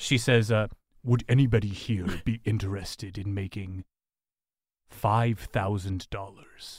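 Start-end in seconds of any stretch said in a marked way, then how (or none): 1.0-6.8 deep voice, much lower and quieter. A child vampire walks up to the players and speaks, deep voice. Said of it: "with a deep voice".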